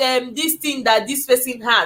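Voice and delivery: ordinary delivery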